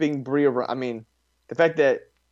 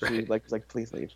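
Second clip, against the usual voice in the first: mock whisper under breath, much quieter; 7 dB quieter than usual. Quoting a woman who said it under her breath, retelling a whisper. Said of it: "It was like a whisper".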